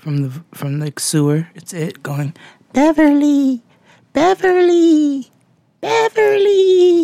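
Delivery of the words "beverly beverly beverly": creepy little voice, much higher, louder, slower. Listing creepy things, imitating the little voice of It calling from the sewer. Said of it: "The little voice in It".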